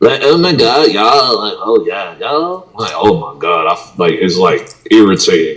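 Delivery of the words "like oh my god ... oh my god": put-on, swooping California Valley Girl accent. Speaker finding the accent triggering, mocking it to friends: mock Valley Girl accent. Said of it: "like the Valley Girl California accent".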